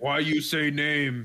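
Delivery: put-on caveman voice. Retelling a scene where Kong answers Godzilla, in Kong caveman voice. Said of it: "Why does he sound like a caveman?".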